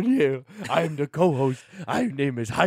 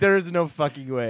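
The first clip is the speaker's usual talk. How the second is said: normal talking voice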